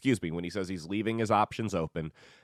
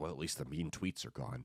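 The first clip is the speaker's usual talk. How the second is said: put-on muttered mumble, quieter; 3 semitones lower, 10 dB quieter than usual. Retelling what a lady at the grocery store muttered: imitating someone muttering under breath. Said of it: "mutter under her breath".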